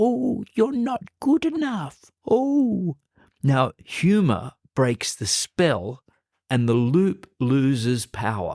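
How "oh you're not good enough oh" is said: very high, squeaky helium-balloon cartoon voice. Showing how a self-critical thought sounds in a silly voice: squeaky cartoon voice. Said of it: "a cartoon-like character voice ... Donald Duck or a squeaky helium balloon voice ... Sounds ridiculously like this".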